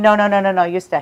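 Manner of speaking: ordinary delivery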